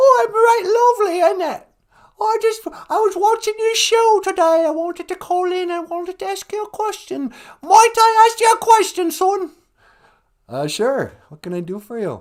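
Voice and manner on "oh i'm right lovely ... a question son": pitched way up, belted out loudly. Playing a caller phoning into the podcast: Queen Mum impression. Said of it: "It's me, the Queen Mum".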